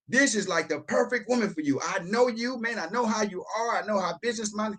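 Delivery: put-on lively, eager, fired-up excitement. Acting out a phone call to Carl, mock-excited. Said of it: "The excitement I just showed".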